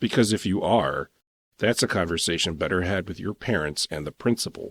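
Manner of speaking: ordinary delivery, nothing marked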